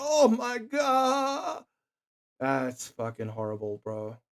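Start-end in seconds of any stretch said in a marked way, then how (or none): 0.0-1.6 put-on, high, anguished pained scream, "God" drawn out. Imitating a figure in the footage screaming in pain: imitating a pained scream. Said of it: "he's screaming out in pain".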